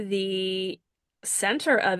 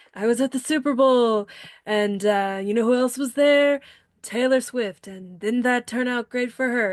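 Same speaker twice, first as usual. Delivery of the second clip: put-on mocking politician voice, higher; 4 semitones higher, 4 dB louder than usual. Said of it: "I don't do a great impression of him".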